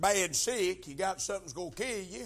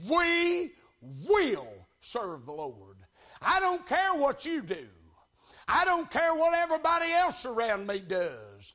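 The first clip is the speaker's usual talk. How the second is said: mock firm, persistent, determined tone with swooping pitch; 4 semitones higher, 4 dB louder than usual. Speaker quoting Joshua to listeners: acting out determined declaration. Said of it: "Can't you hear the determination in his voice".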